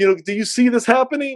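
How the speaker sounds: high, loud, frustrated and exasperated pleading tone.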